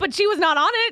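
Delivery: mocking tone.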